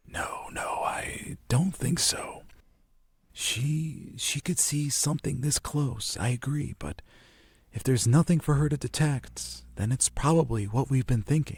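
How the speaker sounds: faint, soft, half-whispered voice. The narrator voices Tamlin's reply, slightly whispering. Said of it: "Tamlin's trying to just be ever so slightly trying to whisper".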